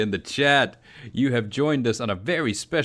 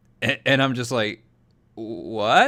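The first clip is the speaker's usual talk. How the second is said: ordinary talk, nothing marked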